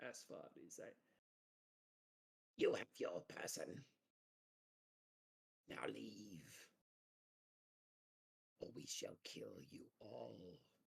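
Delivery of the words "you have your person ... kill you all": hushed, soft goblin character voice. A game master speaking as a goblin to a player's character, in a goblin voice. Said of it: "The goblin says to you".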